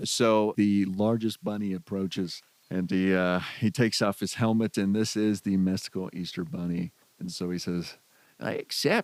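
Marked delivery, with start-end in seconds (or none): 8.4-9.0 squeaky, very high-pitched nerdy voice. Voicing the Easter bunny accepting a duel challenge: nerdy Easter bunny voice. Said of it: "You sound like a nerd".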